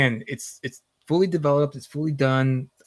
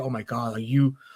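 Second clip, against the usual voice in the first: put-on freaked-out, mock-panicked voice; 2 semitones lower than usual. Retelling the mom seeing the books in the library, imitating a freaked-out mom. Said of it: "She would like freaked out".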